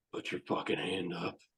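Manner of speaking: put-on low, soft, stern, serious old sensei voice. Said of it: "like an old sensei and he gets real serious".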